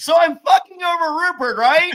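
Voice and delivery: loud, very high-pitched yell. Mocking how a contestant talks in confessionals: imitating Adam Klein confessional yelling. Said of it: "this motherfucker's like".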